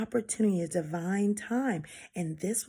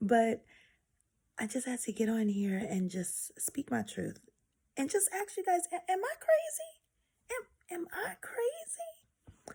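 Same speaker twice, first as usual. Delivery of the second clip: hushed, kept-down voice, pitched up a touch; 7 semitones higher, 4 dB quieter than usual. In bed, trying not to wake her sister, keeping voice down. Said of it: "I'm trying to keep my voice down".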